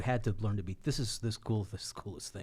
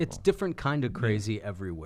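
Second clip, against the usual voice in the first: plain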